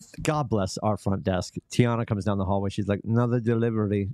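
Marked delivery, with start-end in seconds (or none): 3.0-4.1 clumsy, bad, fake put-on Russian accent. Retelling what the front desk worker said in the hallway, bad Russian accent. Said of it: "That was my really bad Russian".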